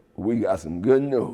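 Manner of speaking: ordinary talk, nothing marked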